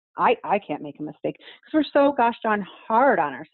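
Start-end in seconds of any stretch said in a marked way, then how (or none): 0.2-1.4 stress placed on the word I. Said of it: "And we say".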